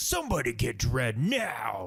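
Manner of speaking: mock snarky, sarcastic villain voice. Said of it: "snarky, sarcastic, stupid dialogue".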